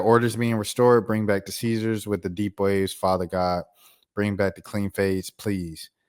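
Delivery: ordinary delivery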